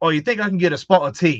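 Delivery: put-on speaking with Australian accent. Retell what a man from Australia said when you got to talk to him, imitating an Australian man. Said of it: "sound like Keno? Calm down there, Carl Urban".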